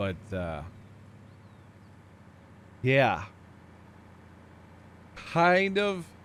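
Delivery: very slow, drawn-out speech through a yawn. Chatting about Flight Sim while apologizing for it, talking through a yawn. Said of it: "Sorry, yawning".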